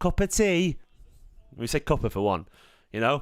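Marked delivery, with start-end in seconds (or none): 0.0-0.8 exaggerated fake English accent. Imitating how americans think the british talk: mocking stereotypical british accent. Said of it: "this is what it sounds like".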